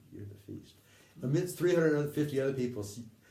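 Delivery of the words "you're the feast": quiet hushed whisper under the breath. Retelling saying a line to someone across a crowd: whispering. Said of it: "I just whispered".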